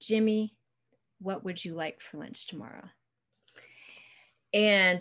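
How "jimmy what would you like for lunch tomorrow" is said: mimicked quiet voice, quieter. Retelling what she said to him while kneeling down, imitating her real quiet voice. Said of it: "she says in a real quiet voice".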